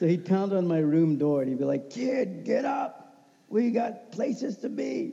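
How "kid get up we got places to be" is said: put-on high, slow, raspy old sportswriter voice. Retelling how a man pounded on his door every morning, imitating a raspy voice. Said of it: "he had that raspy voice".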